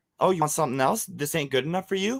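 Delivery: mock catty, nasty, scolding woman's voice. Retelling what a woman snapped at a child: imitating a nasty scolding woman. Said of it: "that's how she was talking to me".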